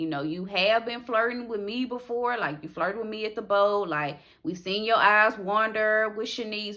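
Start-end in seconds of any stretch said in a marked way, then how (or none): none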